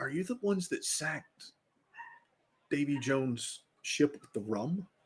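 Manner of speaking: hushed, whispering voice. Voicing a crew member who doesn't want anyone else to hear: whispering. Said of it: "one ass kind of whispers".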